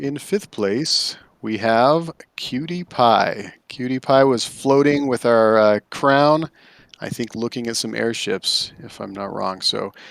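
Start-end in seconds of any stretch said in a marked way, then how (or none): 0.0-3.5 put-on DJ voice, slow on-air announcer style. Announcing who took fifth place, in a radio announcer voice. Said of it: "in my best radio voice".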